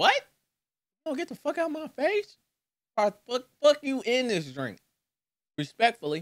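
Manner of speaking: speaking with full mouth. Recounting how you turned down a pushed drink, talking with mouth full of chocolate. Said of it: "There's so much chocolate in my mouth".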